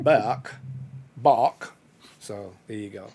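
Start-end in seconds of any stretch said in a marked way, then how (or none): 0.0-1.7 put-on loud Jamaican accent, bake pronounced as bok. Imitating how a baking show presenter says bake: imitating a jamaican accent. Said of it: "a Jamaican accent".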